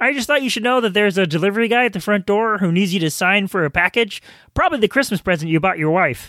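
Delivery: frog puppet character voice. Telling Tim a delivery guy needs him to sign: Kermit the Frog voice. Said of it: "that sounds kinda like Kermit the Frog".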